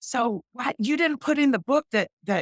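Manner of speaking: high, fired-up, fiery rant. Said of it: "I'm all on fire and I'm like".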